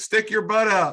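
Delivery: high, loud shouted words.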